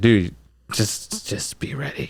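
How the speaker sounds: quiet, low-pitched voice. Retelling what the boss said on a phone call: low voice. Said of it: "in a low voice".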